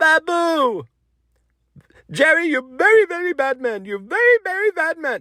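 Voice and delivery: very high sitcom-style voice, name drawn out. Recalling a sitcom character a scammer brought to mind: Babu from Seinfeld voice. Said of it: "reminded me of the guy on Seinfeld".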